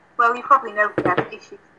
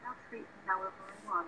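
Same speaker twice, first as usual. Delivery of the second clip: very quiet, hushed, psychopathic murderer menace; 20 dB quieter than usual. Joking to a friend after a promise: pretend psychopathic murderer voice. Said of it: "Didn't I sound like a psychopathic murderer then?".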